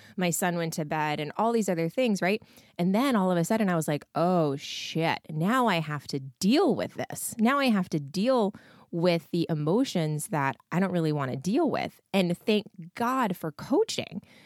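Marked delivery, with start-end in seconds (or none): none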